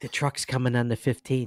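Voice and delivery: put-on whisper. Retelling how a store clerk quietly shared a tip: imitating someone whispering. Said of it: "she's whispering to me".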